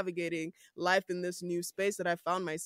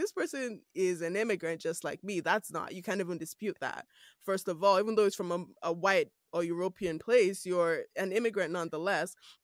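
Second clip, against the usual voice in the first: usual speaking voice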